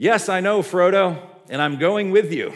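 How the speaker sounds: loud hollering. Retelling a film scene where Sam yells back at the boat: imitating Sam yelling back. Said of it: "Sam yells back at the boat".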